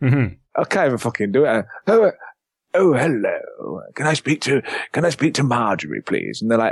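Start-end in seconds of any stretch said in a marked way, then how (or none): 1.9-6.4 put-on old man voice, swooping. Retelling a prank phone call to work, the speaker pretends to be an old man. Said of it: "I pretend to be an old man".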